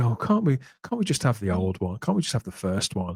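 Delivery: mock weary, tired voice. Speaker quotes what a man said back then, mock-weary voice. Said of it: "the weariness in his voice".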